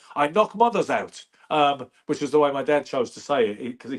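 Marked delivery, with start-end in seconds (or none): 0.2-1.3 put-on English accent, put on. Speaker quoting how their dad said a boxer's line, in an English accent. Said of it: "if you say that in an English accent".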